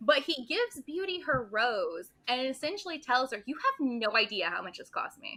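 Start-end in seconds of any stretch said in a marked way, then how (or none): 3.5-5.4 put-on snotty, superior tone with swooping pitch. Retelling how the father gives Beauty her rose: imitating a snotty tone. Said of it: "in, like, a snotty tone".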